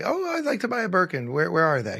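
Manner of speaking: acted, cheeky, joking, sing-song smart-aleck voice. Retelling messing around at Hermes, imitating own smart-aleck self. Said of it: "I was there being a smart ass".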